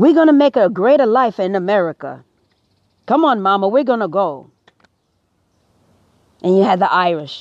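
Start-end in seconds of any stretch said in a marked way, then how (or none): 0.0-4.5 put-on Italian accent. Imitating Italians arriving in America, speaking as they speak: put-on Italian accent. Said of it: "They have a beautiful accent".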